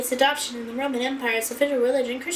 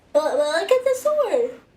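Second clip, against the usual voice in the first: speaking through a yawn, much higher; 4 semitones higher, 5 dB louder than usual. Looking at swords after waking up really early, yawning. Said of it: "Sorry, I'm yawning".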